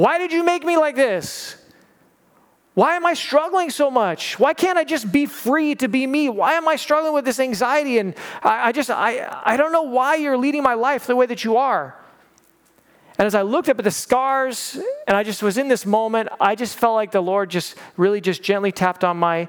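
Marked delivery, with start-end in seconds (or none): 0.0-11.9 high, raised crying-out shout. Retelling a night alone under the sky, imitating shouting at god. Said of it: "I was shouting at God".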